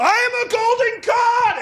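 slow, high-pitched proclamation shout.

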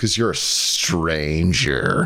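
play-acted, disgusted and dismissive. Discussing a film, the speaker repeats a character's line, imitating a disgusted delivery. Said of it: "He says it with such disgust".

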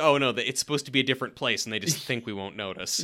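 usual speaking voice

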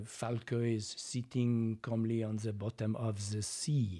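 put-on strong French accent. Giving an example of a French accent: Jacques Cousteau French accent. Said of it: "a Jacques Cousteau sort of".

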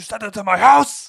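put-on furious, shrill, rough yell, very high, very loud. Retelling a fight scene, quoting Daniel: imitating Daniel's angry voice. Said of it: "I just love the anger in his voice".

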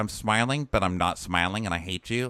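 ordinary delivery

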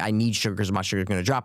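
ordinary talk, nothing marked

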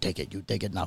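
put-on German-ish accent, very low, hushed. Retelling a trip, the speaker repeats a guy's phrase: Germanish accent impression. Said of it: "I kept doing the guy's voice".

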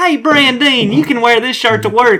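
very high loud cartoon voice. Retelling a cartoon scene in the store: Cletus voice. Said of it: "but he goes".

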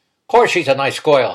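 loud, sharp, snapping delivery. Uncle Joe answers the narrator: snapped. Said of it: "he snapped".

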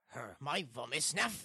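put-on very slight, faint German accent. Mimicking a reversed audio clip in a guessing game: very slightly German accent. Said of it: "Very slightly German as well".

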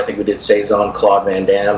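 ordinary talk

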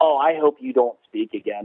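ordinary delivery

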